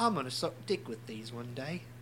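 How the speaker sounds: put-on British accent. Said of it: "the second straight episode I've done a British".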